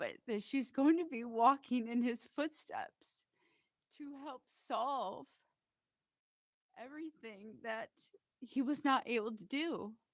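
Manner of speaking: high-pitched, tearful crying with joy.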